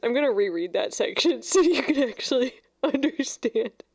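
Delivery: still teary, speaking through tears. Reading a book aloud, about to reread a section for listeners, still in tears. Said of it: "I'm still like in tears".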